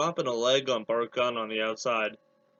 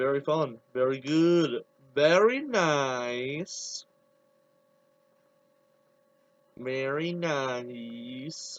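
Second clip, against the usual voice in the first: very slow, bad Eastern European accent, drawn-out "nice". Wrestling commentary after a title is retained: bad Borat impression. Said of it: "my bad uh, Borat impression".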